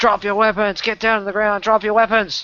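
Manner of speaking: very high, shrill, loud, barked yelling. Game master voicing guards confronting the players' party; yelling commands. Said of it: "And they're yelling at you".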